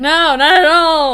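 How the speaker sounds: sarcastic tone. Answering a player whether the halfling is concerned: sarcastic tone. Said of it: "I picked up the tone the second time around".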